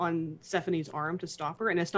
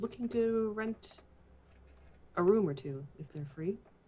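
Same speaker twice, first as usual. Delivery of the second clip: hushed voice; 3 semitones higher, 3 dB quieter than usual. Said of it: "she's speaking more in a hushed tone".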